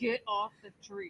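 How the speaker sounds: very soft, hushed voice through clenched teeth. Voicing a mad animal scolding others, mock speaking through gritted teeth. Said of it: "She's speaking through her teeth".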